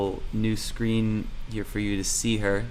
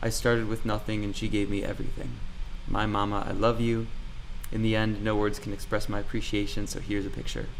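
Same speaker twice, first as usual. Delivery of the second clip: normal talking voice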